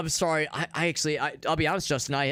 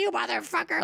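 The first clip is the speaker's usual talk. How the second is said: put-on surly, cranky old grandma voice, pitched up; 8 semitones higher than usual. Voicing a sweet cat as a surly, grumpy granny. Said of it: "a surly granny".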